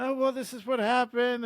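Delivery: mock tearful voice, talking through sobs. Retelling explaining to parents what happened with the car: imitating own past crying. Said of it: "I was crying".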